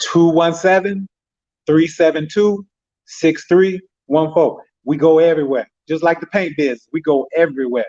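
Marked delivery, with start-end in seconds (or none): 0.0-4.6 slow, deliberate, carefully spaced delivery. Reading out a phone number after being told to slow it down: slowed down. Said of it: "Give them the number and slow it down".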